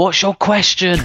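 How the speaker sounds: play-acted shout at a very high pitch. Retelling a long audience question cut off, imitating a woman shouting. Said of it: "this woman at the back just shouted".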